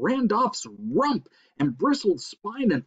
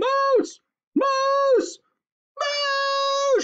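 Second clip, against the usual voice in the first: very high, drawn-out siren-like screech; 4 dB louder than usual. A narrator reads a woman's shout in a story: siren scream, screeching. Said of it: "She screeched".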